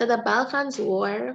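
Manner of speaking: slowed-down, slow, careful pace.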